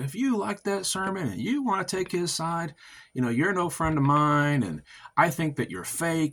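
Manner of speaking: play-acted, high, heated, berating preacher-style screaming rant. Retelling how Pastor Anderson screamed at them: imitating Pastor Anderson screaming. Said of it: "Pastor Anderson is screaming at me and saying".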